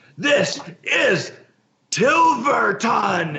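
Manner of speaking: high, shouted yell. Voicing a character running at an ogre: yelling. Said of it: "and he just yells".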